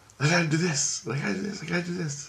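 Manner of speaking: soft muttering. Retelling a girl at the bathroom door: imitating someone mumbling to herself. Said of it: "she's mumbling to herself".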